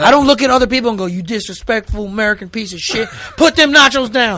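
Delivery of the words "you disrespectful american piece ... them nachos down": put-on Southern accent, scolding tone. Acting out scolding a fan at a game: imitating a southerner. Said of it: "Why they gotta be Southerner".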